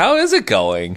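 slow, lingering, sultry delivery. Imitating the co-host's greeting to him: imitating a sultry greeting. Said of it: "it just feels so sultry".

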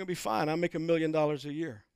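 very calm, hushed, soft and reassuring voice. Retelling what the other stranded man said, retelling a very calm remark. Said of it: "very calmly said".

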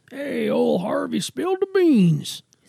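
put-on high, creaky cowboy voice. Joking about idioms with a co-speaker, doing a cowboy impression. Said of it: "That was my cowboy".

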